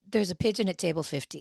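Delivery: imitated whisper. Retelling going up to someone for advice: imitating a whisper. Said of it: "I whisper".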